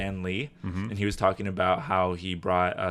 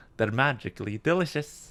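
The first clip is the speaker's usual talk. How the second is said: high, fairy-like leprechaun character voice; 5 semitones higher than usual. Asked for an impersonation, speaker quotes the commercial: Lucky Charms leprechaun impression. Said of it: "a impersonation of it?".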